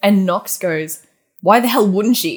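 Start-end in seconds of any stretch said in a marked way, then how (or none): 1.4-2.4 mock defensive tone, louder. Retelling a character's reply in a book discussion: imitating a super defensive reply. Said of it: "super defensive".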